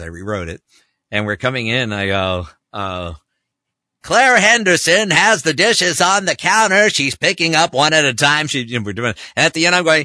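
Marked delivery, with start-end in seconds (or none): 4.0-8.5 loud, very high-pitched big sportscaster play-by-play call. Retelling a commercial read about dishes: big sportscaster voice. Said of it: "a big sportscaster".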